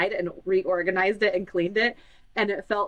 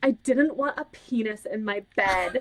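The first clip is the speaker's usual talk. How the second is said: mock fed-up kid's grumble, slow and exasperated; 3 semitones higher than usual. Retelling a daughter's complaint about her brother in her bed: imitating an exasperated child. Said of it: "so exasperated".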